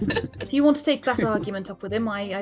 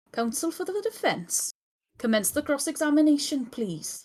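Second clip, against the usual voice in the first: put-on Welsh accent; 6 semitones higher, 3 dB quieter than usual. Voicing the judge who opens a courtroom scene: Welsh accent. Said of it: "something in a Welsh accent".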